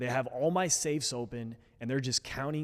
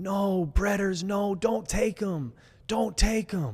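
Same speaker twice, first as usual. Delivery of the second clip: play-acted, loud, high, screaming, pleading old woman voice; 7 semitones higher, 6 dB louder than usual. Retelling his grandma as he is walked out the front door, screaming. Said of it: "My grandma was screaming".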